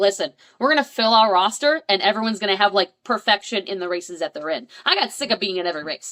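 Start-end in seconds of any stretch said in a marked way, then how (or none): none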